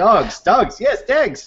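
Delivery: put-on slow, high-pitched, drawn-out accented speech. Imitating a film character's hard-to-understand accent. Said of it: "the way he speaks".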